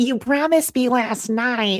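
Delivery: put-on high-pitched, thick, heavy Southern accent.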